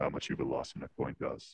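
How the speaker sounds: put-on low voice. Asked by a friend to do the deep voice one on a voice box, deep voice. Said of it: "Do the deep voice one".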